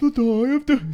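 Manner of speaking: changed, very high-pitched put-on voice. Imitating the other speaker's changed voice when he announces the die. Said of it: "you change your voice as well".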